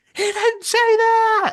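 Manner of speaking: play-acted loud, very high, drawn-out shriek. Retelling how someone in the crowd screamed during a debate: imitating someone screaming. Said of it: "literally screaming in the crowd".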